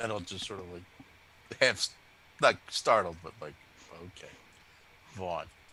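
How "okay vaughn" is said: deadpan, flat, much lower and quieter. Patting a companion on the back as everyone looks to him, deadpan. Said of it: "just deadpan like as flat as you can say it".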